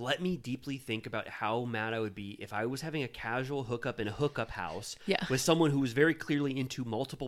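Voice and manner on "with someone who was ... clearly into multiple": ordinary talk, nothing marked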